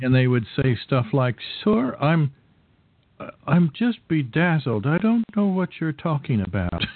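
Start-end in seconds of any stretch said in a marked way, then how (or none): 1.6-6.8 put-on high, sing-song English accent with swooping tune. Retelling what they said when he asked for things, in an English accent. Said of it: "talking more with an English accent".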